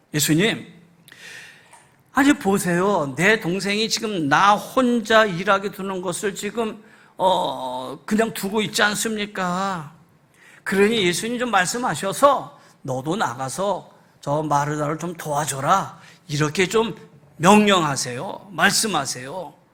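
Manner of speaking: plain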